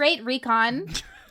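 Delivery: ironic, audibly sarcastic tone. Commenting on another speaker's poor recon while invisible: sarcastic tone. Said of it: "I can hear the sarcasm in your voice".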